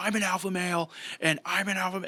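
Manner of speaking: high, acted screaming, breaking off mid-word. Retelling how a man at the mic screamed: imitating someone screaming. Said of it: "he started screaming into the mic".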